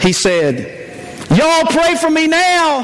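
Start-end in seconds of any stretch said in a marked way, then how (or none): 1.3-2.9 mock child's voice, loud and high-pitched. Retelling someone carried out of the service under his father's arm: retelling a loud call. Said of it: "in a loud voice".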